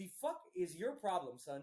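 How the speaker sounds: plain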